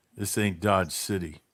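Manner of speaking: deep, very low, tired, weary, disgusted mutter. Quoting a character's last line before a gunfight: imitating a tired, disgusted voice. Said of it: "in a very tired, disgusted voice".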